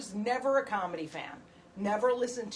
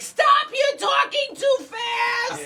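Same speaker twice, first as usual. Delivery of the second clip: put-on very loud, very high, shrill old woman voice; 10 dB louder than usual. Pretending to be her on the phone with the utilities, in an old lady voice. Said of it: "So I put on old lady voice".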